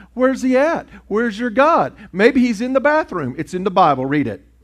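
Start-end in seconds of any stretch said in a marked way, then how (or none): 0.2-3.4 play-acted jeering sarcasm, very high pitch. Retelling a Bible story, the speaker acts out a mock-sarcastic taunt. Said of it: "Elijah began to get sarcastic and mock them".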